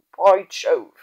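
loud, grumbled exclamation. Narrator voices Baron Patience reacting to a dramatic idea, grumbled. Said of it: "grumbled Baron Patience".

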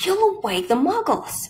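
high hiss with swooping, swinging pitch. Professor McGonagall hushes the howling Hagrid: hissed. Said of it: "hissed Professor McGonagall".

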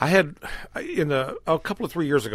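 tripping over words and restarting, stammering. Starting an anecdote to another speaker, stammering. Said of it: "I'm kinda s-, stammering".

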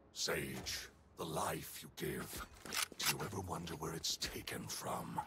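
deep, low voice. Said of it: "Ooh, the deep voice".

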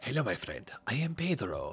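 put-on very soft, musky murmur in a Spanish accent. Voicing the talking banana character in the game, Pedro's musky Spanish accent. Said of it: "a banana that speaks with a musky Spanish accent".

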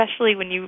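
plain

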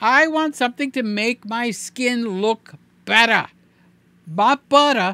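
New Jersey way of talking. Reviewing a camera and complaining about missing skin smoothing, in a New Jersey accent. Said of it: "That's New Jersey accent".

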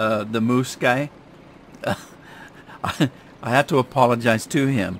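speaking while breaking into laughter. The speaker apologizes about the last person they talked to, laughing while talking. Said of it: "Sorry, I'm laughing".

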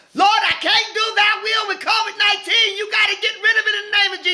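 play-acted hollering, very high. Recalling crying out to the Lord about COVID-19, retelling hollering at the Lord. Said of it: "hollering, I said hollering".

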